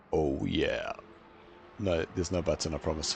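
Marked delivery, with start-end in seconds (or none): 0.1-0.9 put-on deep bass voice, lower and quieter. Joking during race commentary about pushing a bass button: deep bass voice. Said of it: "Watch like this".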